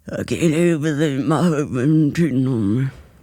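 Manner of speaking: man-like acted voice. Playing a woman in a role-play scene for a co-speaker, voice sounding like a man's. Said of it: "this is how my voice sounds when I do it".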